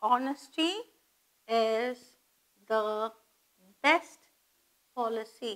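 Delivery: "honesty" with silent h, each word separated by pauses. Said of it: "H is mute".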